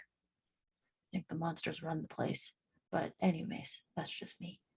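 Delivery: very low, hushed, barely audible whisper. Playing a character in a role-play scene, very low whisper. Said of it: "whispering very low".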